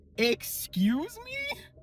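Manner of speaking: very high, slow, drawn-out, stunned disbelief.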